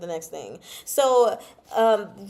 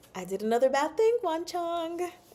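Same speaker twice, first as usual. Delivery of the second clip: gentle, soft, slightly high voice; 8 semitones higher, 4 dB quieter than usual. Retelling a story, the speaker quotes one character speaking to another in a soft voice. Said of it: "says in a soft voice".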